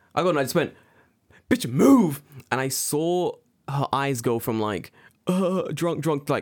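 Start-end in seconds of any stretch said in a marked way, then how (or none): 1.4-2.2 loud, high-pitched, barked shout. Retelling telling a drunk crowd to move aside: imitating own shout. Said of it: "I've never shouted some fuckers sober".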